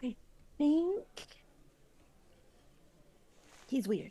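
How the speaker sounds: whispered aside. Acting out a line passed on to the person next: whispering. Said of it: "just whispers it to the person next".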